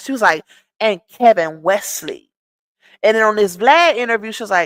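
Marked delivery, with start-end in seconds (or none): 0.8-2.3 put-on, slightly sassier tone. Retelling how she said it on her Instagram live, imitating her sassy delivery. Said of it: "she said it with a little more sass".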